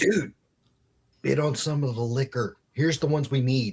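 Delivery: quiet whispering. At an auction, the speaker retells urging a friend to bid: whispering. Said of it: "I whispered to him".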